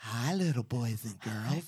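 soft, creepy, sociopathic, murderous grandma voice. Playing with voices alongside a partner, doing a creepy murderous grandma voice. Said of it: "It's like a murderous grant, like a sociopathic".

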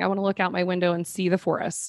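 normal talking voice

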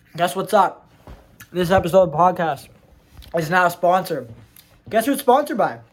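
speaking mid-bite, chewing with full mouth. Podcast host opening the episode while eating, chewing while talking. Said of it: "chewing in the beginning of my podcast".

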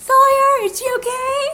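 high, loud annoying voice. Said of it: "and Kate's like".

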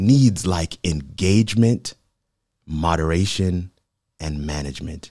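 slow, carefully spaced, deliberate dictation pace. A speaker listing what online communities need so listeners can note them, speaking slowly. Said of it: "I'm saying it slow".

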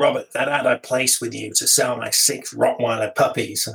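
put-on northern English Yorkshire accent. Retelling what a man from Harrogate said about his ad, imitating the man's accent. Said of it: "I've thought in the accent now".

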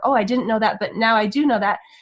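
ordinary talk

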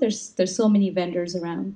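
usual speaking voice

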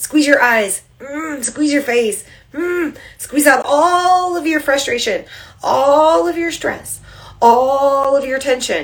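tense, strained voice. Relaxation leader squeezing every muscle along with listeners, in a strained squeezing voice. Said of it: "I'm squeezing so hard you can hear it in my voice".

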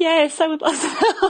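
very high, tearful, crying through the words. Telling a story, replaying the speaker's answer when a man offered help: retelling crying. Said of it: "And I'm just crying".

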